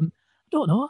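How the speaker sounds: very quiet, hushed, murmured. Retelling how someone answered whether she was all right: imitating a very quiet reply. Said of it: "very quietly went".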